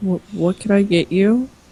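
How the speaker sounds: soft, quiet, hushed voice. Narrating a tabletop scene, a server cautiously approaches a customer, speaking quietly. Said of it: "kind of quietly says".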